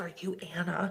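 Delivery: quiet, soft half-whisper. Retelling how a very quiet girl came up and spoke: imitating a half-whisper. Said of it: "she whispered in my ear".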